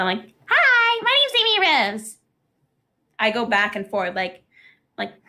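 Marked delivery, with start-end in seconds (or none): 0.5-2.2 very high, sing-song, swooping cartoon character voice. Showing how the comic dub switched characters: Amy Rose voice. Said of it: "'cause I was Amy and Blaze".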